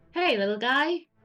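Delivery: put-on little critter rat voice. Speaking to a small animal, using the rat voice: rat voice. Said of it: "I go with my uh, rat voice".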